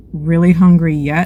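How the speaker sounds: usual speaking voice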